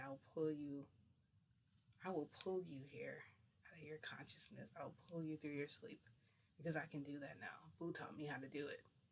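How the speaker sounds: imitated whispered voice. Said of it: "he was, like, whispering to me".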